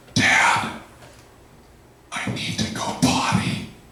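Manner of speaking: put-on slow, hushed whisper in a small boy's voice. Retelling how a five-year-old son woke him: imitating a child's whisper. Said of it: "he whispered into my ear".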